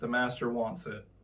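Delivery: ordinary delivery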